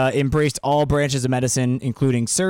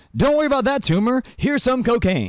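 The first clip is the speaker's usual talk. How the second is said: put-on high-pitched, old-timey 1930s doctor voice; 11 semitones higher than usual. Joking his own remark sounded like an old doctor, speaker mimics: 1930s doctor voice. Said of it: "like a doctor in the 30s that was like".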